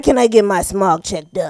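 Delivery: imitated, put-on fake deep voice. Retelling what a customer asked the mechanic, imitating his put-on deep voice. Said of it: "trying to have this like deep voice".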